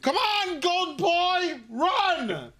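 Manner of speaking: shrill, very drawn-out high yell, run stretched out. Voicing a character who urges a runner on: Reggie Beast screaming. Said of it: "Reggie Beast is screaming".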